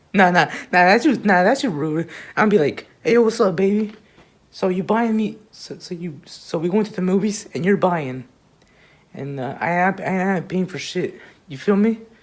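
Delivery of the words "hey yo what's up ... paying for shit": ordinary delivery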